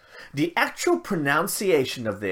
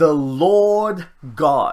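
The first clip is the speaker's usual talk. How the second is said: "The Lord God" drawn out very slowly, strongly stressed. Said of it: "I'm gonna bold this next bit here".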